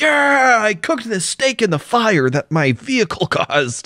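high-pitched mocking put-on voice. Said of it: "It's like".

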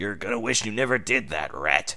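chilly, ice-cold, icy tone. Scourge gets up and warns Sonic before a fight, cold. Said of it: "he said coldly".

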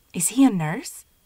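stage whisper meant to carry. Narrator, visiting alongside Schumann, asks him a question in a loud whisper. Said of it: "I asked Schumann in a loud whisper".

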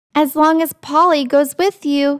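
plain reading voice

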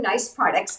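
ordinary talk

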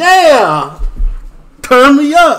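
very loud, high-pitched hype yell.

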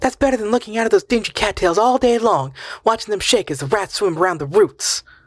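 voice rising to a very high pitch. Narrator voicing a woman arguing with a man, voice rising again. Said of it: "Her voice rose again".

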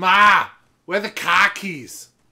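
loud, high-pitched Boston accent. Showing all it takes to do Boston: Boston accent. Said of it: "All you have to do for Boston is say".

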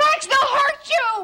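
very high, loud, scared, worked-up voice. Trying to stop Max from going out to Bubba, agitated and upset. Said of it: "calm down".

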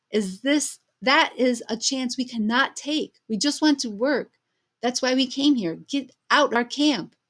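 loud yelled delivery. A narrator reads a man answering a woman who urged everyone to stop working, yelling back. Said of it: "He yelled back".

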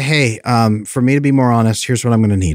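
ordinary talk

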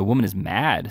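ordinary delivery

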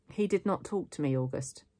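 ordinary delivery, nothing marked

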